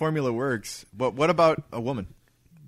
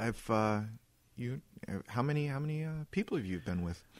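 put-on girl voice, quieter; 9 dB quieter than usual. Playing the woman in an acted dating scenario: best girl impersonation. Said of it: "That was my best girl impersonation".

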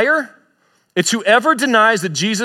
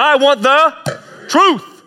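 impassioned, pitched up, very slow and drawn out; 5 semitones higher than usual. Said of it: "say it with some passion here".

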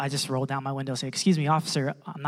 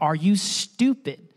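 play-acted, high screaming; 5 semitones higher, 4 dB louder than usual. Retelling what an officer asked at a traffic stop: imitating an officer screaming. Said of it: "he screams at me".

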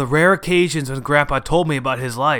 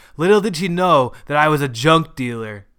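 ordinary delivery

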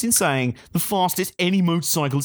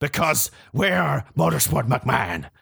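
rough, raspy voice with full creak. Joking about claiming three main events: Vince McMahon impression. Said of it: "That's my best Vince McMahon impression".

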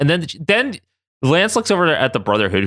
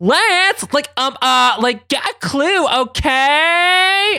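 put-on valley girl voice, much higher, slower; 13 semitones higher than usual. Recapping a scene, quoting Kitty turning around to Lance: Kitty's Valley Girl accent. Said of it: "Kitty's fucking Valley Girl accent comes back".

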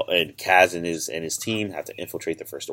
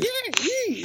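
voice pushed very high in pitch. Discussing a character from a show, imitating Kaz's high-pitched voice. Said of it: "his voice is so high pitched".

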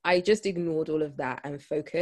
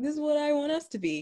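put-on squeaky, very high, teasing American accent; 11 semitones higher than usual. Speaker repeats the partner's words from that moment, in a mock american accent. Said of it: "He's got an American accent. I'm always mocking him".

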